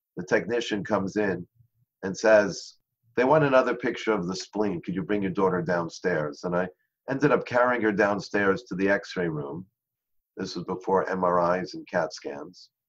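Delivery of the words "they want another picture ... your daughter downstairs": plain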